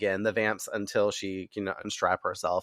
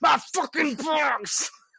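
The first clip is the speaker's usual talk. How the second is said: enraged, furious, very high-pitched yelp. Retelling a scene where the mayor smashes a chair: imitating the furious mayor. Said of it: "pissed the absolute fuck off".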